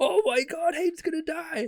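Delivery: put-on frantic panicked screaming, very high, shrill, loud. Retelling a story, the speaker acts out the listener screaming for help: mock panicked screaming. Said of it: "Like while you're screaming".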